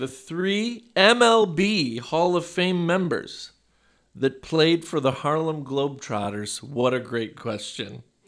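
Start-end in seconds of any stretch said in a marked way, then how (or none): 0.0-6.6 very slow, each word stretched and drawn out. Reading a trivia question aloud to the group, very slowly. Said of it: "I'm going to say it very slowly".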